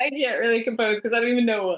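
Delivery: talking through laughter. Trying to talk during a fit of giggles on a podcast: laughing while talking. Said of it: "I'm laughing so hard".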